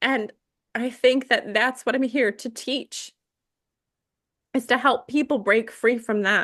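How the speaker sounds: emotional, moved voice. Explaining a personal life mission after a healing experience: getting emotional. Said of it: "I don't know why I'm getting emotional".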